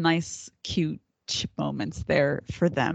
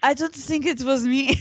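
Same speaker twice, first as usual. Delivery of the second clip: high, overboard fake French accent. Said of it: "doing the fake French accent".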